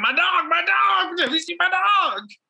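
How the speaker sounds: mock manic screaming. Retelling a man yelling at a woman about his lost dog Scooby, imitating manic screaming. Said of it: "this man is just manic and screaming about his lost dog".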